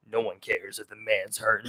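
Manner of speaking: very low, soft, manly car-commercial voiceover. Describing a favorite car commercial with a narrator: deep manly narrator voice. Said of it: "It's like a deep manly voice".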